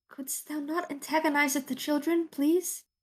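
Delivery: sidelong half-whisper under the breath. Speaking to another character about the children: half-whispering under his breath. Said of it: "whispers under his breath".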